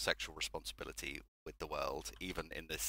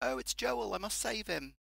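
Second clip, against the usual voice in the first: put-on British accent, very high-pitched; 3 dB louder than usual. Imagining the character's line in the British actor's real accent, British accent. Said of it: "he's played by a British man. If he'd have done it real".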